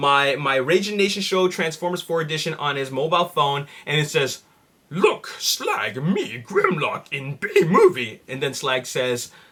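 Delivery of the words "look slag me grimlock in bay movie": slow robotic voice with swoops. Reading out a caption where Grimlock speaks, Grimlock robot voice. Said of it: "that was my best impression of the Dinobots".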